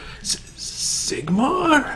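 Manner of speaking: weak, dazed, faltering whisper with stumbling start. Voicing a man just waking up with glassy eyes: dazed whisper. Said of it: "you just hear him whisper".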